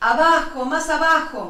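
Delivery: high-pitched loud shouting.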